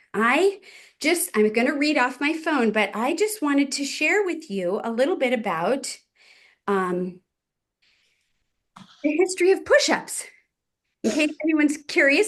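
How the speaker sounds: puffing, winded, short of breath. Speaker addressing the group before reading from a phone, winded. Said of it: "because I'm totally winded".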